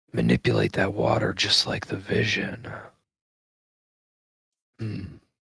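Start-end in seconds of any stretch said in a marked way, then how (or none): 0.1-2.6 muttering under breath, lower and quieter. Playing a character looking at his hands, saying it under his breath. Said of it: "kind of under his breath say to himself".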